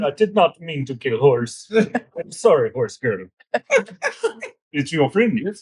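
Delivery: on the verge of tears, with swooping pitch. A player's character hears a horse's neck crack, tearing up. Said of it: "he starts to tear up a little bit".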